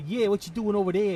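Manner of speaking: fast, loud, put-on Brooklyn accent. Listing different American accents in conversation: Brooklyn accent. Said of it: "You got the Brooklyn accent".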